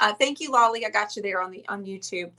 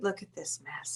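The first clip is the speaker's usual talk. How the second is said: put-on mutter under breath, lower and quieter; 5 semitones lower, 13 dB quieter than usual. Retelling a husband's remark about the mess: imitating Matt muttering under his breath. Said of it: "I can hear Matt under his breath".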